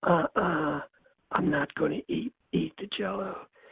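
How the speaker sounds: quiet, soft-spoken, hushed voice. Retelling a man refusing to eat his Jello, imitating Hyman's soft voice. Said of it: "his soft voice".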